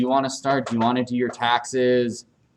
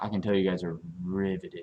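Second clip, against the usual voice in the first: teasing, sarcastic delivery; 6 semitones lower, 9 dB quieter than usual. Remarking to the class about how interested they are: sarcastic. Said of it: "I'm being sarcastic".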